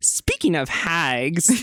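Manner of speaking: hostile, aggressive delivery, stretching out hags. Acting out Cheryl's line after being told to say it more aggressively: aggressive Cheryl line. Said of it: "You have to do it more aggressive".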